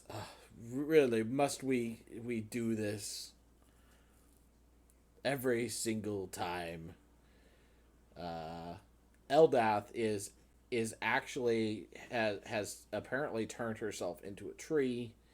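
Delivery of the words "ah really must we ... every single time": queasy, nauseated, green-around-the-gills god voice. Voicing a god who has turned a little green: queasy god character. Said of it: "you can tell she's turned a little green".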